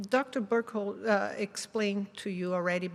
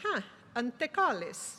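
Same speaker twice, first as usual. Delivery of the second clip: put-on "antecollis" said in an Italian accent; 3 semitones higher than usual. Act out an italian man seeing a patient from the clinic door, imitating an italian accent. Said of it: "with uh, his Italian accent".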